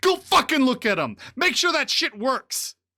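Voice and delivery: very high-pitched, very loud, shrill angry shouting. Voicing a character in the game who yells at somebody: yelling at someone. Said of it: "he's yelling somebody".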